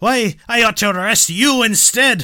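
very loud, very high, booming, slow thick Irish brogue. Performing a character's line in a scene read aloud, in a thick irish accent. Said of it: "says in a thick Irish accent".

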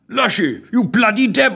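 astonished, flabbergasted, roaring, bellowing outburst. The First Lord, seeing the past in the viewfinders, bellows at Lushy, flabbergasted. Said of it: "bellowed the First Lord, quite flabbergasted".

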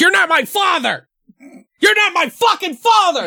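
put-on shrill, very high child tantrum scream. Retelling a movie scene where Ethan storms off: imitating a scream. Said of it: "why are you screaming".

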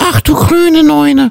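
very high-pitched, duck-like cartoon voice. Making the listener guess whom the speaker is imitating, in a Schnatterinchen duck voice. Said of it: "Pittiplatsch und Schnatterinchen ja".

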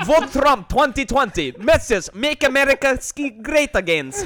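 high, loud, slow, put-on Russian accent.

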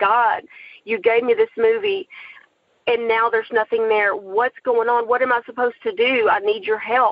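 ordinary delivery

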